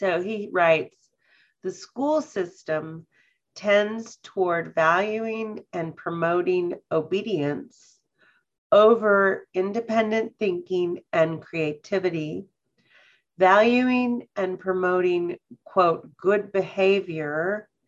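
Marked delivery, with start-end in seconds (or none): 1.6-17.6 slow, unhurried, paced-out reading. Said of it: "hopefully I'll read it slowly enough".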